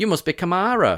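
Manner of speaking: buoyant put-on American accent. Retelling greeting a new colleague at the bar: imitating own buoyant American greeting. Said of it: "very American".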